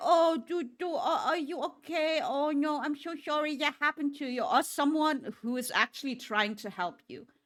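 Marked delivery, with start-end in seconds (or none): 0.0-4.4 put-on fussing concern, high pitched. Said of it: "being like".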